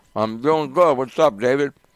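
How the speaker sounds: talking with mouth full. Greeting a caller on the air, talking with mouth full. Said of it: "Sounds like you got your mouth full".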